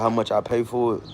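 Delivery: ordinary talk, nothing marked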